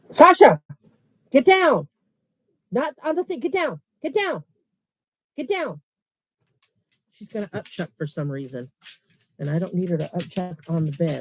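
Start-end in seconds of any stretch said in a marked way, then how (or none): 0.1-5.8 loud, very high-pitched yelling. Telling the dog Sasha to get down off the bed: yelling. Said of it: "Sorry, I didn't mean to yell at y'all".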